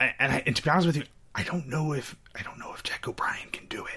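hushed whisper. Sharing an honest doubt with the other person in the conversation, whispering. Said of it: "you don't have to whisper".

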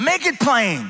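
put-on loud call-out, imitated shouting. Retelling an elder calling out during the preaching: imitating someone shouting. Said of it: "one of the elders shouts out".

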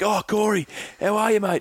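put-on high, cheery, cheerful old man voice.

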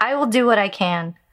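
plain reading voice

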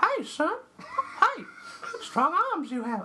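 put-on creepy old man voice, very high, drawn out. Reading a prompted line aloud in Herbert voice. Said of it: "Read in the voice of Herbert the pervert from Family Guy".

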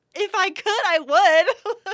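very high, loud angry comeback. Retelling her own reply to another woman's remark, retelling own angry reply. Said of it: "And I was so mad".

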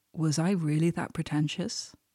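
plain

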